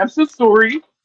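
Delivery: fake stock Canadian accent. Repeating an apology as a joke in a put-on canadian accent. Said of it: "I'll say it like a Canadian".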